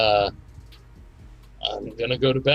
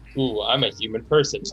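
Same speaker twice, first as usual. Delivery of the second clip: ordinary talk, nothing marked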